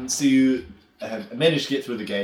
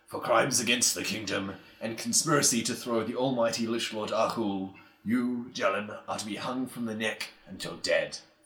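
guttural, executioner-like voice; 4 dB quieter than usual.

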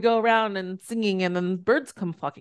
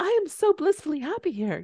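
sugary, high cartoon fairy-tale princess voice; 6 semitones higher, 4 dB quieter than usual. Speaker giving an example of one way of thinking: Disney princess voice. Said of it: "said in the Disney princess voice".

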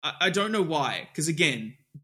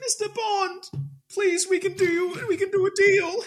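very high-pitched, desperate pleading; 3 dB louder than usual. Retelling the film scene where Blofeld begs Bond: imitating Blofeld begging.

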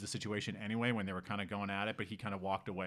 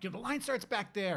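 very high, sharp barked delivery; 11 semitones higher than usual. Retelling a dispute in a line, the speaker quotes a woman: imitating someone barking orders. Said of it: "she started barking at him like".

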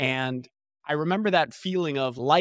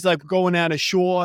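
put-on New Jersey accent, higher and louder; 4 semitones higher, 4 dB louder than usual. Mocking how people think everyone in new jersey talks: imitating a new jersey accent. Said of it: "Thinks we all talk like this".

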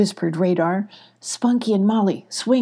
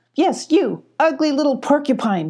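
high, needling, mocking, teasing tone; 8 semitones higher than usual. A character taunts a creature being stung from behind, teasing. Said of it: "teased Radar".

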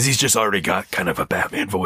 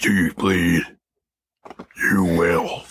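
slow growl, like a voice modulator. Discussing a voice modulator, quoting a line in Batman voice. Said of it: "it's all about the voice changer thing that's there in the first place because it's just a voice modulator thing".

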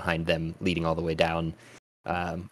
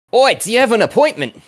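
very loud, shrill, high-pitched shout; 15 dB louder than usual. The game master's figure atop a pyramid calls down to the arriving players: shouting down. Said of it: "and he shouts down".

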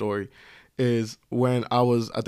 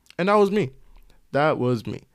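plain

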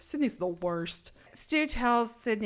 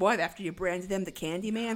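normal talking voice

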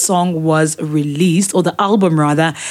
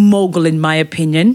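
ordinary delivery

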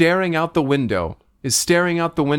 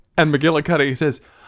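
plain

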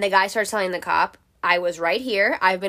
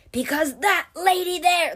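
put-on scream, higher; 9 semitones higher than usual. Retelling what a screaming man yelled at the police: imitating someone screaming. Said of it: "He's still screaming at me".

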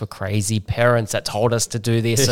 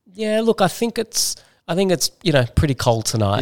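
mock sarcastic delivery, much higher pitch; 7 semitones higher than usual. Retelling answering her nightly question about the cold, a sarcastic reply. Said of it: "I'd sarcastically lick my finger".

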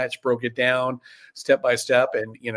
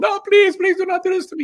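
bad put-on Russian accent, much higher and louder; 6 dB louder than usual. Retelling a comic heel's line from a wrestling match, in [name]'s bad Russian accent. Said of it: "with the bad Russian accent and everything".

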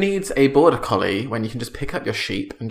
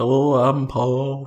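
put-on Liverpool accent. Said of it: "Is that closer to [name]?".

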